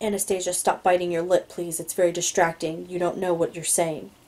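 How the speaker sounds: plain reading voice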